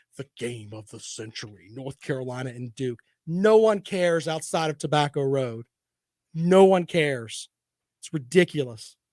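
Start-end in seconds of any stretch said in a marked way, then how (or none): 0.1-3.0 very deep, hushed movie-trailer announcer voice. Mocking ESPN's hype for North Carolina versus Duke, old big movie trailer voice. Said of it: "the old big movie trailer voice".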